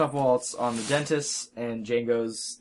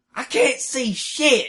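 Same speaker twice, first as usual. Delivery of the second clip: put-on very high, slow southern drawl; 14 semitones higher, 4 dB louder than usual. Retelling a movie scene with hooded raiders: imitating a southern drawl. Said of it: "with their southern drawl".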